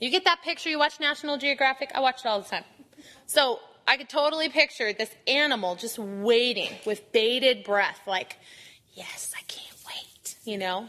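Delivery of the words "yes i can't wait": put-on devil voice, slow whisper. Speaker pictures Satan waiting to grab someone, in a bad Satan voice. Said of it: "I do a really bad Satan voice".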